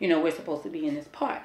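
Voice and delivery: plain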